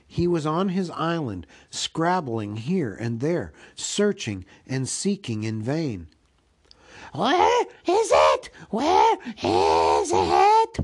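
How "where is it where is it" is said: very high, very loud, swooping anguished wailing. Reading a story aloud, a creature searching in the dark: Gollum crying out. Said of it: "Bilbo heard him crying".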